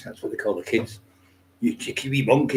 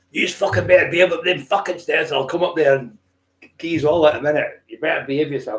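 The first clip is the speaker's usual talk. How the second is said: put-on thoroughly Scottish accent, loud, proper scolding tone; 4 semitones higher, 5 dB louder than usual. Retelling a mum shouting up the stairs: imitating mum's proper scottish accent. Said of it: "Scottish like that, proper Scottish".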